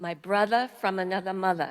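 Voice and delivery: loud, best-effort New York accent. Describing a friend named Ron, saying a phrase in a New York accent. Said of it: "I'm going to say it in my best New York accent".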